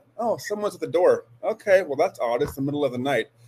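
normal talking voice

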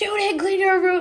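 very high, fake yelling telling-off. Retelling the woman picking her up yelling on the phone; retelling fake yelling. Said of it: "yelling on the phone".

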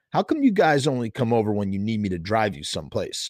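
plain

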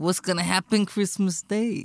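mock gangster delivery, put-on tough tone. Repeating a man's question about christmas day, mock-gangster delivery. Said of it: "pretty gangster".

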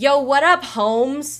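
super annoying street-slang voice, loud and high-pitched. Imitating a game character's annoying way of talking: imitating Alex's super annoying slang. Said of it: "super annoying, like, ... kind of talk".

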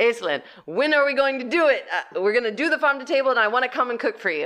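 bombastic, quick Sicilian voice. Speaker quotes a man talking to her, in a bombastic Sicilian voice. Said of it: "He said it in a much bigger, bombastic Sicilian voice".

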